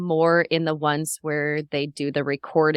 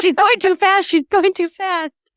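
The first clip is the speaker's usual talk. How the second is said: high, loud, panicked fretting. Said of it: "I was like".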